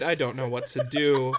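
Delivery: plain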